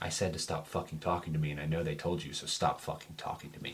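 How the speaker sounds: hushed, very quiet, breathy whisper. Narrating a scene, the storyteller voices a woman whispering over her shoulder. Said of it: "She kind of whispers over her shoulder".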